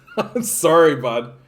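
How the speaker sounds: talking while laughing through the words. Apologizing to the other speaker for a grim topic, laughing while talking. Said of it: "I don't know why I'm laughing about that".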